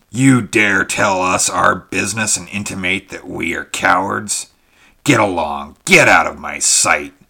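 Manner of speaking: furious, loud, angry bellowing roar. The Kothian takes the Sumerian's remark as a personal slur and answers: roaring. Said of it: "he roared".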